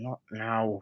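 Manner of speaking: hushed half-whisper. The storyteller voices a man across the room who shakes his head; half-whispering. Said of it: "kind of whispers like".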